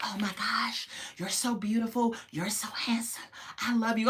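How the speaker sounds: hushed, soft whisper. Retelling how a couple spoke at their meeting: imitating a couple whispering. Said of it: "they were just whispering".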